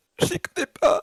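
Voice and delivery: high, loud, wailing fake sobs like child.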